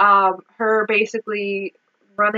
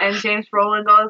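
ordinary delivery

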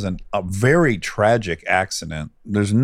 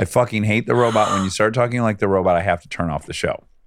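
plain

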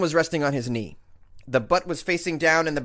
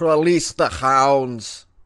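unsure, attempted Russian accent; 2 semitones lower, 4 dB louder than usual. Redoing a quoted line from a news story, attempted Russian accent. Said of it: "Is that Russian?".

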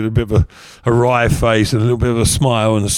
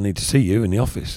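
ordinary delivery

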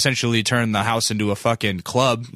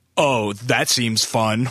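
mock snide, salty tone. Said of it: "some salty wife will be like".

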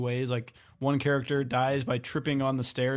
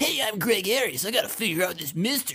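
goofy, wacky, high-pitched cartoon voice; 8 semitones higher than usual. Describing the dub of Another, imitating Greg Ayres as a wacky character. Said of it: "just sound like wacky characters".

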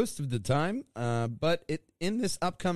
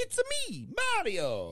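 very high, bouncy, swooping cartoon hero voice; 10 semitones higher than usual. Discussing Chris Pratt cast as Mario, doing the Mario voice. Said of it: "Everybody can do the voice".

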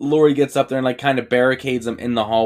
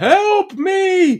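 put-on, pitched-up yelling out. Retelling a movie scene where an escaped patient shows up: imitating a character yelling. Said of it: "He's just yelling".

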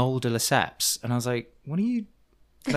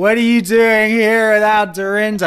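put-on drunken yelling, higher and louder; 9 semitones higher, 11 dB louder than usual. Retelling yelling a question into someone's ear: imitating a drunken yell. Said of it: "drunkenly yelling into Macy's ear".

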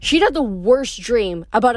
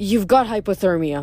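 plain

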